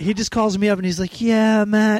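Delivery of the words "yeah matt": easygoing, mild, gentle-mannered voice. Retelling a phone call from a man who called him; imitating a soft-spoken man. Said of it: "He's like really soft spoken".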